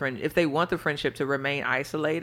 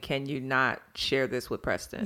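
ordinary talk

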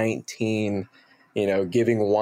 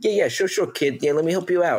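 put-on New Jersey accent, pitched up; 7 semitones higher than usual. Retelling what a bar manager said when asked for accent help: imitating Dave Latour's Jersey accent. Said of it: "Jersey, East Coast, Jersey guy from Hoboken".

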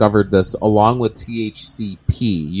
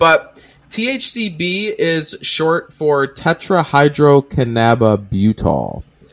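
deliberate, slow, careful, syllable-by-syllable, pitched-up pronunciation; 5 semitones higher than usual. Speaker explaining what thcb stands for, saying the long word slowly. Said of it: "And I said that slow".

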